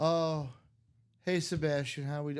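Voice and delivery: put-on uncaring, indifferent voice. Imitating a card breaker greeting viewers: imitating an uncaring greeting. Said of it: "You can tell he doesn't care".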